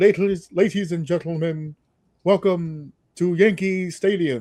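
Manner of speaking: distinct stadium pa announcer voice. Retelling the ballpark announcer's welcome: Bob Shepard voice. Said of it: "he had a very distinct voice. I, I tried to get close. He was like".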